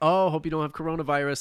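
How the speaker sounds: ordinary talk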